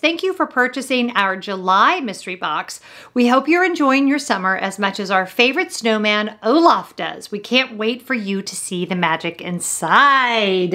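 plain

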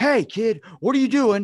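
high, loud woman's voice calling out. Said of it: "this woman comes out and goes".

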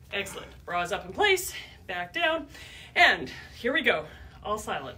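ordinary talk, nothing marked

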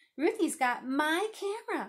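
loud, high outcry, crying out. A boy answers a question about the camera dispute, crying out. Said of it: "cried Martin".

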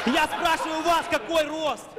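exasperated loud, high voice.

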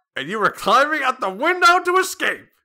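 very high shout, rising in pitch throughout. Voicing Chalmers scolding Seymour in a game: yelling as Chalmers. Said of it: "I'm yelling a lot as Chalmers".

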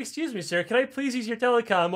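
sweet, polite tone. Acting out a game dialogue option, asking a guy nicely: asking nicely. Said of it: "ask some guys nicely".

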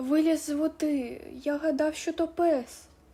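mumbling. Hrytsyk points at the wolf and answers Shvaika's question, mumbling. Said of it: "пробелькотів Грицик".

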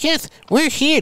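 very high, tiny, squeaky little voice. Joking about a dispatch call, the speaker voices the arriving AR-15s in a little squeaky voice. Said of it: "That's how I figure AR-15 would sound like, a little squeaky".

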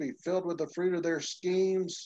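ordinary delivery

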